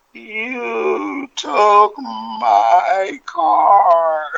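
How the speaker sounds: rough rasp on every word. Retelling what a man curled up in bed said to him, quiet raspy voice. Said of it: "he says in a quiet, kind of, you know, raspy voice".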